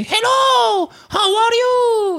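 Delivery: put-on cute old-fashioned robot voice. Retelling how a remote-controlled robot greeted people: cute old-fashioned robot voice. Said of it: "cette voix trop mignonne de robot d'à l'ancienne".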